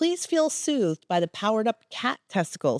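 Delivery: ordinary delivery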